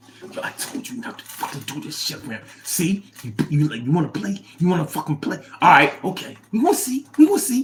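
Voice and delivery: furious, angry whisper. Showing what a whisper argument sounds like; angry whisper. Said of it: "You ever have a whisper argument?".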